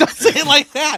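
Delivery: high, loud, laughing protest.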